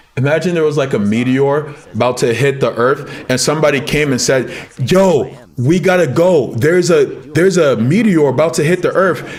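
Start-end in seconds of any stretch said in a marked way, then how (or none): none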